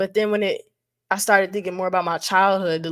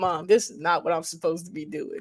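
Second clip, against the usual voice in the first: acted-out, tearful words spoken through crying; 2 semitones lower, 4 dB quieter than usual. Retelling a call to mom from college: retelling crying to mom. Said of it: "I was crying like".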